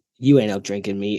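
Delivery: put-on low, dead-flat, deadpan Boston accent. Retelling a funny moment at the zoo, imitating a deadpan Boston accent. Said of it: "the deadpan look and the Boston accent".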